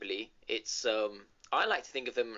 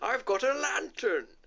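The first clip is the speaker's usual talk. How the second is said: very high, squeaky, bad Welsh accent; 12 semitones higher, 4 dB louder than usual. Mocking another speaker's attempt, repeating the character's line in a bad Mr. Drippy Welsh accent. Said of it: "That's the best Welsh accent you can come up with".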